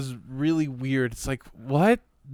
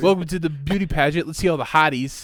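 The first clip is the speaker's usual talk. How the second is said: ordinary delivery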